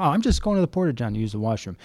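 normal talking voice

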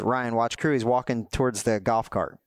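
ordinary talk, nothing marked

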